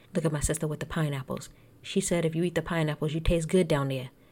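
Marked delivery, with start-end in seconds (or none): 2.3-4.1 put-on New Jersey accent. Retelling what the sister said to her brother, in a put-on Jersey accent. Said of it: "don't mind my Jersey accent".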